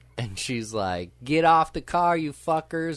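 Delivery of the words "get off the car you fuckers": high-pitched, hollering, screaming woman's voice. Retelling a movie scene where a girlfriend screams at people on a car: imitating a woman screaming. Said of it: "starts screaming".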